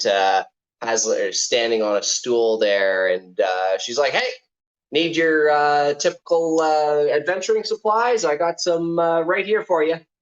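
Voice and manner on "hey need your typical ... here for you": perky, spunky, high-pitched little character voice. Voicing a spunky halfling on a stool offering adventuring supplies: spunky halfling voice. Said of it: "a spunky kind of, uh, halfling".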